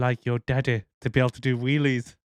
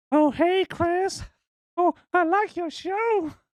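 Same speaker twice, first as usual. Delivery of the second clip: very high, elderly cartoon man's voice. Joking that the devil shows up at Chris's show, old guy from Family Guy voice. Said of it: "like that fucking old guy off Family Guy".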